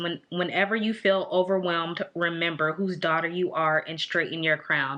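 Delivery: ordinary talk, nothing marked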